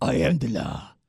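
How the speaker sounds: deliberately bad, horrible, sly delivery. Quoting a movie line in a horrible impression of Sylvester Stallone. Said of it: "that's a horrible, sly impression".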